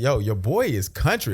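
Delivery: ordinary talk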